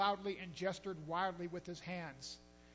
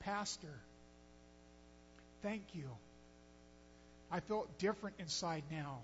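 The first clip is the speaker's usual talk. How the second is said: soft, quiet, breathy, near-whispered murmur; 5 dB quieter than usual. Retelling what Sergei said to the pastor after they prayed, speaking quietly. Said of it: "he said quietly".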